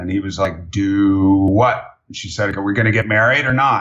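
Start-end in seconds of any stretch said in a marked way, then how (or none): 2.6-3.8 put-on deep froggy twangy voice, faster. Retelling how his mother asked his father about getting married, imitating a deep froggy twangy voice. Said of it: "had a bit of a twang and a very deep froggy voice".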